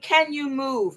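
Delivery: put-on plain English-sounding British accent. Recounting what a woman asked her, quoting her in a British accent. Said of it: "she said with her British accent".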